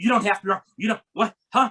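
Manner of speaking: breathless hyperventilating babble. Retelling a cab ride, imitating the driver hyperventilating in the front seat. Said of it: "he's like hyperventilating in the front seat going".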